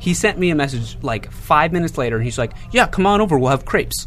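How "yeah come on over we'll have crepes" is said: put-on heavy New Jersey accent, laid on thick, pitched up. Quoting a message from a man met only once before, in a Jersey accent. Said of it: "he's got a kind of jersey in that".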